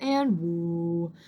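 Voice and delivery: voice dropped right down low. Showing the call used to bring a horse in: dropped low voice. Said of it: "really drop my voice".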